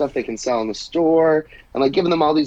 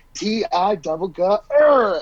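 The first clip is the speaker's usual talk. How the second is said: mock very slow, spelled-out, drawn-out, pitched-up bellow; 7 semitones higher than usual. Picturing scaring off a mascot, pretend shouting very loudly. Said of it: "I would shout very loudly".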